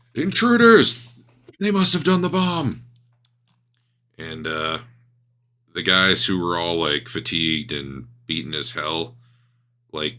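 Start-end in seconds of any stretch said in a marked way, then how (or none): 0.2-2.9 very high, shrill, loud yell. Voicing a woman on a landing who spots intruders: NPC yelling. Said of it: "She's yelling".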